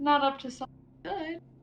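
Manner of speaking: hushed, whispered voice. Answering a companion in character about nearby danger: whispering. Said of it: "I'm whispering".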